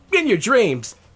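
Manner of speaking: blurted out. Teased by a girl about having a crush on her, he answers, blurted out. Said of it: "Sonic blushed and then blurted out".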